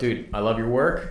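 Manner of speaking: ordinary delivery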